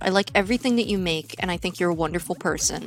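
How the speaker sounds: very quiet, hushed, menacing, threatening tone. Complimenting the other speaker's work, the speaker says it in a threatening tone. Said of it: "I said that with a very threatening tone".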